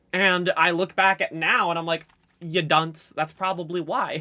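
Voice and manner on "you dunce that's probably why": ordinary talk, nothing marked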